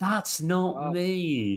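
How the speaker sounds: unconvincing tone. Mocking another speaker's unconvincing denial: imitating an unconvincing denial. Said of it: "That was not very convincing at all".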